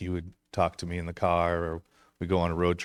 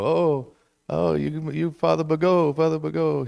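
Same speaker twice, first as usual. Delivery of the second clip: very high, slow, raised, put-on Italian accent; 10 semitones higher, 7 dB louder than usual. Retelling how his great-grandmother always greeted him, in an Italian accent. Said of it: "she had like an Italian accent".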